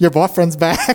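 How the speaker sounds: put-on twangy country accent. Quoting a random technician's favorite line from a show, in a country twang. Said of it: "It's country twang".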